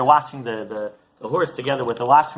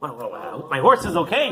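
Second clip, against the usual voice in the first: ordinary talk, nothing marked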